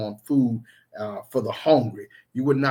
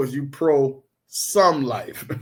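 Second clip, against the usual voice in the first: very slow, each word stretched out. Explaining a play on words to listeners, said real slow. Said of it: "If you say it real slow".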